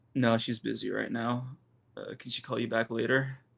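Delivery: voice dropped down. Answering a phone call for someone who is busy, lowered voice. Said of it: "Why'd you lower your voice?".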